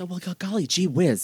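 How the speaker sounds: wide-eyed, innocent stage ingenue voice. Critiquing an actress's performance, demonstrating her ingenue voice. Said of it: "ingenue voice".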